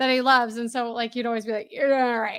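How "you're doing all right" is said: put-on drunken voice. Quoting a movie line the way a friend always said it: imitating a drunk voice. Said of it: "you'd always say it like he was drunk".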